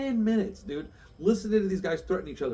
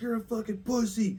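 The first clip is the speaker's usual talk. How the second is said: sharp, snapped, pitched-up put-on screaming; 5 semitones higher than usual. Retelling the other guy's insult back at the clerk: imitating someone screaming. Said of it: "And there's just screaming".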